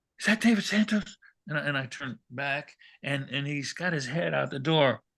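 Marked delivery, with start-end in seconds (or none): 0.2-1.2 loud, high-pitched stage whisper, partly whispered. Retelling a voice calling out in a hotel hall: imitating someone whispering. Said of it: "He's kinda whispering".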